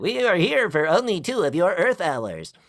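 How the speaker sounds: otherworldly alien voice with swooping pitch. Discussing voice placement and showing how alien voices are portrayed, in an alien voice. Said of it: "like alien voices".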